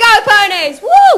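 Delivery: cheering voice. Asked by an interviewer for their best cheering voice, a house captain cheers. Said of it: "what's your best cheering voice?".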